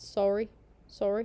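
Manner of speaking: put-on Canadian accent on "sorry". Asked for a Canadian sorry, saying it in a Canadian accent. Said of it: "Can you do a Canadian sorry?".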